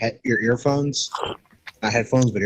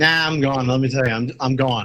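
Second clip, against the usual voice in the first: plain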